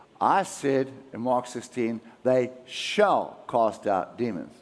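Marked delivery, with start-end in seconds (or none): none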